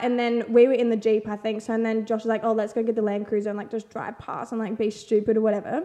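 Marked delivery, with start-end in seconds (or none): none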